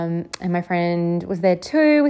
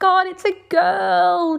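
high, slow, amazed joyful cry. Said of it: "I was like".

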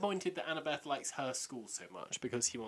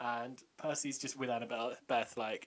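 ordinary talk, nothing marked

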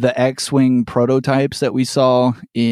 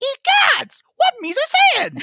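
swung high in pitch with a drawl. Quoting a movie character whose high voice matches: Jar Jar voice. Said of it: "crazy Jar Jar lines".

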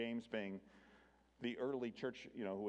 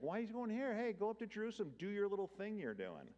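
very high, swooping, sing-song, mocking sarcastic taunt; 11 semitones higher than usual. Retelling Jesus' brothers urging him to go to Judea: imitating sarcastic brothers. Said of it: "this is all kind of sarcastic".

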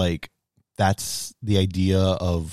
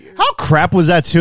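high-pitched voice, higher and louder; 10 semitones higher, 8 dB louder than usual. Complaining about a film's ending to another speaker: high-pitched voice. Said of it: "that was, like, high pitch".

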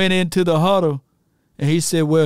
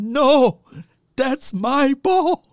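little high voice, very slow, drawn-out and passionate; 7 semitones higher than usual. Quoting a player from a documentary, in Playmaker's little high voice, passionate. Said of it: "He had that little high voice".

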